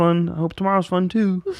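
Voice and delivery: put-on puppet frog voice. Describing going back to his room alone: Kermit the Frog voice. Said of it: "Is that a Kermit the Frog voice?".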